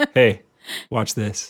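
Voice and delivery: put-on show-off manner. Imagining being a kid who can fly, in a mock show-off tone. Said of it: "in that tone of".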